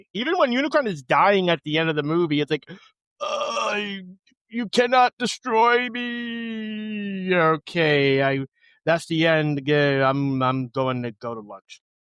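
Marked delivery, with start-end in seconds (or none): 3.2-11.8 very slow, flat, emotionless, drawn-out drone. Mocking a voice actor's flat reading of a dying villain: imitating Orson Welles without emotion. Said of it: "only bit of emotion we get".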